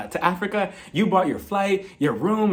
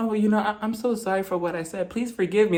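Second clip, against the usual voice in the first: put-on small, little baby voice; 2 semitones higher, 3 dB quieter than usual. Complaining about a cast member's fake apologies, imitating Marlo's baby voice. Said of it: "She has to use that little baby voice".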